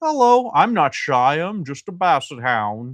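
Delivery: put-on voice of a toy dog. Showing a vintage basset hound figurine on camera, voicing a basset hound figurine. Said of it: "Look at the face".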